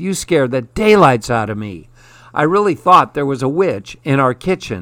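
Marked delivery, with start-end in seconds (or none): none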